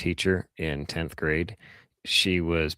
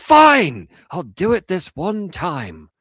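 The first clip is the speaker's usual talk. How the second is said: raised, loud British voice. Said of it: "she was British".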